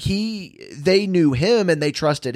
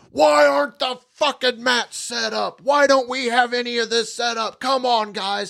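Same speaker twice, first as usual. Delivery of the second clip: mock high, raised yell; 8 semitones higher than usual. Retelling a guy who rolled up after filming, mock-yelling. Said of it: "he just starts yelling".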